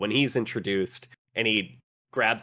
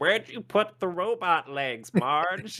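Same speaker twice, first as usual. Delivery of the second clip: put-on old lady voice, pitched very high; 9 semitones higher than usual. Retelling a scene where characters act like old ladies, imitating an old lady. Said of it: "they're just being such old ladies like".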